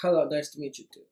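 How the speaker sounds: put-on Russian accent. Retelling what a date said on meeting: imitating a Russian accent. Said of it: "has a Russian accent".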